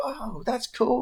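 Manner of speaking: very high, overly nice customer-service voice. Imagining a fighter babysitting kids: Colby Covington customer service voice. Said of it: "he'd put on the real customer service voice".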